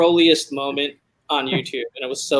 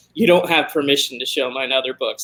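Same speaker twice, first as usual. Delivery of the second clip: ordinary talk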